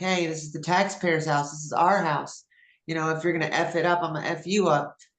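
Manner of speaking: ordinary talk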